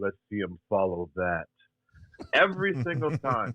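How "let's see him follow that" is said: soft, hushed stage whisper. Retelling what a wrestler half-whispered after each match: imitating someone half-whispering. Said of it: "he'd whisper in my ear and he'd say".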